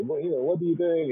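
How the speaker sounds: put-on French accent. Recalling a man who kept coming by the speaker's office: thick French accent. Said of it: "with his big, thick French accent and say".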